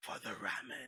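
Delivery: soft, breathy whisper with wistful feeling. Acting out a hero turning wistfully at sunrise: whisper. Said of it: "and you whisper".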